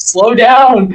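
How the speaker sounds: shouting. Voicing crew on another ship heard across the water: yelling. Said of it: "they can hear yelling".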